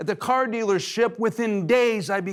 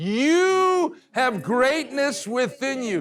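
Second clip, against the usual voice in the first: heartfelt, sincere delivery; 3 semitones higher than usual. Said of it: "Now say it like you mean it".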